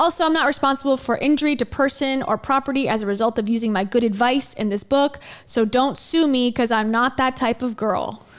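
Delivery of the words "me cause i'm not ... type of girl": normal talking voice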